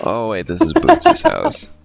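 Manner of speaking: drawn-out, swooping, deflated, disappointed tone. Repeating the other speaker's line back, imitating a disappointed tone. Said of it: "I like the disappointment in your voice".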